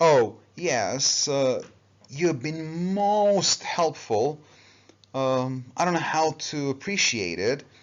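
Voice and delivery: dry, sarcastic tone, long drawn-out o in "most". Showing a class a sarcastic remark: sarcastic, drawn-out "most". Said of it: "I was trying to be sarcastic".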